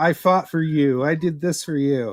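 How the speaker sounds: boastful, ranting, speechmaking delivery. Discussing translated speeches, one friend acts out the dictator, imitating Hitler screaming. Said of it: "that's all him just screaming".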